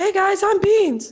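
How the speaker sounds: very high, squeaky cartoon voice. Introduced by the host, a guest greets the listeners, Mickey Mouse-like voice. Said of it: "Is that a Mickey Mouse voice?".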